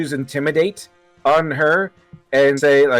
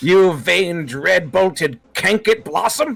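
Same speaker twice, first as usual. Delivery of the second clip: intimidating, threatening tone in character; 3 semitones higher than usual. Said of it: "There's a lot of feeling behind them".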